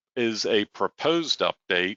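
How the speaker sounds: stress on the word proposed.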